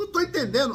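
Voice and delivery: loud, high, indignant kingly voice.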